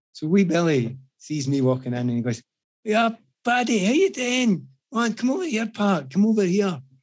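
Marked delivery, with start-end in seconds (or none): 2.8-6.7 put-on drunk, thick Scottish accent, pitched up. Retelling how a drunk friend greeted the speaker: imitating a drunk friend, heavy scottish accent. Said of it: "My accent may be quite difficult".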